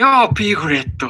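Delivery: very high-pitched cartoon storybook bear character voice. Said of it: "みんなが思うプーさんやってみよう".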